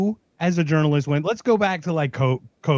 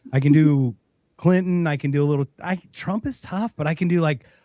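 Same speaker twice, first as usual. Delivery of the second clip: normal talking voice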